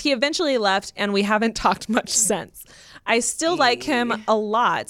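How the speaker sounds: usual speaking voice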